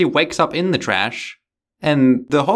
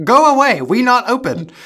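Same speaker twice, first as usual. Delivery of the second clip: small, squeaky little voice, pitched high; 8 semitones higher, 3 dB louder than usual. As a woman answering a restaurant door to a visitor, in a squeaky little voice. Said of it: "she said in a squeaky little voice".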